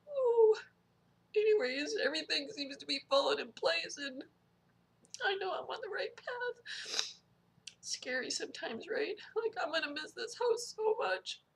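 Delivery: soft, teary voice, crying while speaking. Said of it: "I'm so sorry that I keep crying".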